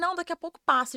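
speaking through crying. Recounting breaking down while working on a client, the speaker retells speaking while crying.

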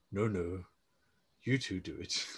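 low, groggy grumbling voice. Imitating a cartoon dad who sounds hungover: low hungover Daddy Pig voice. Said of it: "his voice sounds really low, ... sounds like he's hungover".

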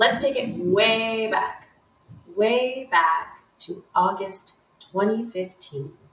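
slow, unhurried documentary narrator voice. Opening a story about the past with a put-on narrator voice, a hint of Morgan Freeman. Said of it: "I'm really liking that narrator voice".

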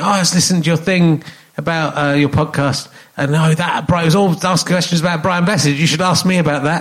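ordinary delivery

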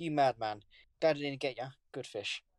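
ordinary talk

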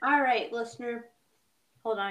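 speaking while chewing, mouth full. Host telling the listener to hold on, talking with mouth full. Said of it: "I got a granola bar in my mouth".

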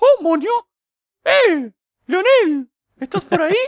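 very high, loud, swooping cartoon voice. Imagining Mickey Mouse looking for the listener and calling out, Mickey Mouse voice. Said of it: "con voz de Mickey Mouse y todo".

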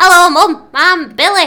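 put-on loud, high little-boy voice, calling out. Showing the voice of Billy, the boy character the speaker played; Billy voice. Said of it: "And this was my voice".

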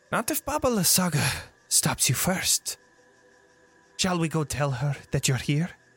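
amused, laughter held just under the words. The coven's central witch answers a would-be king, witch almost laughing. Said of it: "You approach this central witch that doesn't seem to be taking anything from you. She seems to be almost laughing at you at first, / She seems to be almost laughing at you at first".

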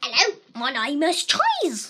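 goofy cartoonish voice, loud, hammy, swinging pitch. The speaker demonstrates a series of weird voices, Cheese's voice. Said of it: "this is Cheese's voice".

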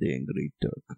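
put-on Russian accent, breathy and hushed. Saying a beer's name as a joke: Drago voice. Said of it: "a Russian accent, like Drago from Rocky Four".

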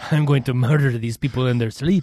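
put-on Spanish accent, murder hornet voice. Voicing a murder hornet that sneaked inside: Spanish-accented murder hornet voice.

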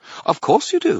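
chirpy, very high, cheerful voice. Narrator reading Bob's reply to another character, in a cheerful tone. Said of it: "Bob said in a cheerful tone".

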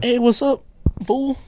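very high-pitched, full-energy voice. Doing a high energy George Lopez impression for the other speaker: George Lopez impression. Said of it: "I'll be George Lopez instead".

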